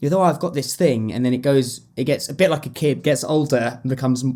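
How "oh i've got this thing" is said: ordinary talk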